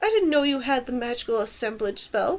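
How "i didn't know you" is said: plain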